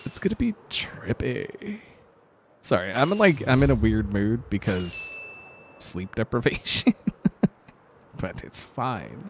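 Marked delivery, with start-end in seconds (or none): 0.0-1.8 put-on stoner voice, higher and quieter. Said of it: "That was actually a pretty good stoner voice".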